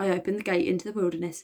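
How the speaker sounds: ordinary delivery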